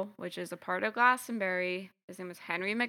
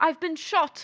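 pitched-up fake British accent, crying out; 8 semitones higher, 4 dB louder than usual. Telling a story, voicing a hunter who was shot, in a put-on british accent. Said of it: "you gave him a British accent".

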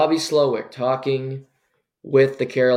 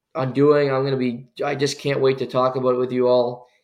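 ordinary talk

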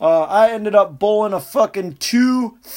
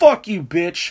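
put-on mild angry outburst, argumentative; 3 semitones higher than usual. Telling how they cursed out their own bowling ball in public, retelling shouting at a bowling ball. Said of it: "like I'm really arguing or fighting with somebody".

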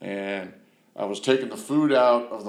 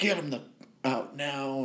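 slow, angry, pissed-off tone, acted; 4 semitones higher, 6 dB quieter than usual. Retelling what she said on finding the speaker's friends inside, retelling an angry order. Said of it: "She was just pissed".

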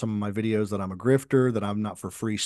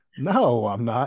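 put-on, spoken through giggles, laughing; 4 dB louder than usual. Retelling a woman's answer to a joking question, imitating her laughing reply. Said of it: "she started laughing and she goes".

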